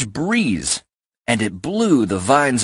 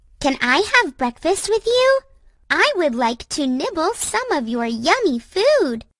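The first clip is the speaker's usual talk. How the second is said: very high, sweet birdlike voice. Narrator reading the line of Gwen the wren in a story, sweet high Gwen the wren voice. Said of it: "said a sweet voice high up in a tree".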